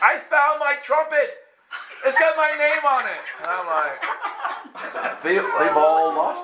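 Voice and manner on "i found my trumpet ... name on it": very high, shrill, sudden screaming outburst. Storyteller acts out what a lady screamed, retelling a lady's scream. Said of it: "this lady screams".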